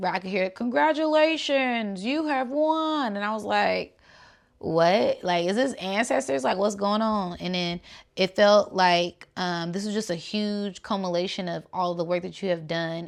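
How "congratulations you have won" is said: high, drawn-out, announcer-style game show host voice. Recalling hearing a winning announcement, game show voice. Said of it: "it sounded like a game show".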